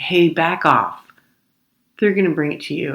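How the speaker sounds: acted brusque, curt, dismissive tone. Retelling the counter worker cutting off a question: imitating a curt dismissive worker. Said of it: "put me in my place with her energy".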